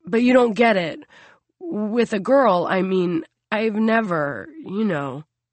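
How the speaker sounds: embarrassed voice, breaking and cracking. A narrator reads a son's line to his father, voice cracking with embarrassment. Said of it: "His son's voice cracks with embarrassment".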